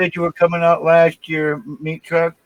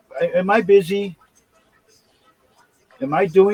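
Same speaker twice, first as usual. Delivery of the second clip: normal talking voice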